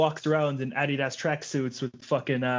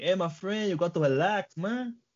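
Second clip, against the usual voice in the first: put-on clumsy Brazilian accent, pitched up, verging Mexican; 5 semitones higher than usual. Retelling what a brazilian man said to him, imitating a brazilian accent. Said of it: "That sounded Mexican".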